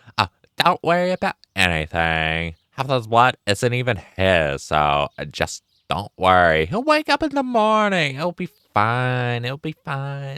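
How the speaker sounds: put-on full Valley Girl talk, high and swooping. Redoing the previous reassurance on request, in a Valley Girl voice. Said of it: "do that in a Valley Girl voice".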